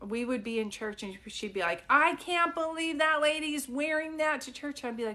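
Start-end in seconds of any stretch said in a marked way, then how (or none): 1.9-4.9 loud, full voice, no hushing. Retelling a church remark by the mother: imitating a loud mom. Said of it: "my mom could not whisper".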